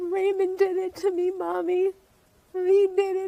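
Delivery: put-on bawling, sobbing small child's voice. Mother retelling her child's confession, imitating a bawling child. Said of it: "he started bawling and he says".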